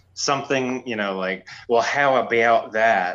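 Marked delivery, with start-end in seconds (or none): 1.7-3.2 folksy put-on Baltimore drawl. Showing how one slips into the movies' characters' talk: Baltimore accent. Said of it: "I love the, uh, Baltimore accent".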